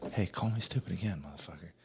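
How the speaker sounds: quick, menacing half-whisper up close. Describing a movie character walking up close to someone, retelling a close half-whisper. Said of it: "getting real close and whispering".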